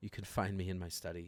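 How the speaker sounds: low, soft half-whisper. A game master voices Lady Astunia speaking to the players, half-whispering. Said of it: "and she whispers this".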